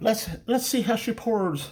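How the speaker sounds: worst put-on Irish accent, very high-pitched. About to pour a favorite beer, worst Irish accent. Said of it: "in my worst Irish accent".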